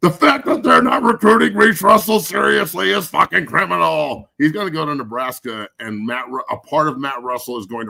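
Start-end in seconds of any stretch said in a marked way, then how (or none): 0.0-4.3 raised, rough, all-caps shouting rant. Repeating a complaint to another speaker that was written in all caps: yelling. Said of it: "so maybe I should yell".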